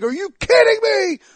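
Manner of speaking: very high, loud, angry, furious screaming. Retelling hearing bad injury news while walking the dog: imitating own angry scream. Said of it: "I was screaming".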